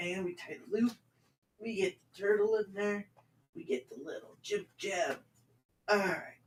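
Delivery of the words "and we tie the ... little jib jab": put-on hushed, soft, high-pitched kids'-show host whisper. Tying a shoe while talking, doing Mister Rogers voice. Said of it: "I'm gonna do Mister Rogers, but not as nice".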